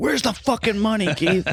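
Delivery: high mock gruff yell.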